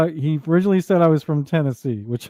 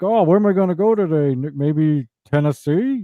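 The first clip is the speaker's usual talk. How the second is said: acted sly, playful, joking insinuation, slow. Retelling a hint aimed at the speaker: imitating John Smugly's sly humorous hint. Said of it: "he's just add a little humor to it".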